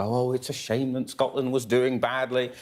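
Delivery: mock patronizing sympathy. Imitating England fans speaking about Scotland: imitating slight condescension. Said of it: "slightly condescendingly go".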